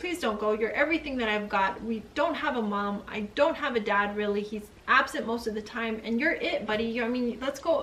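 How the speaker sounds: ordinary talk, nothing marked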